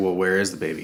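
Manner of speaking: plain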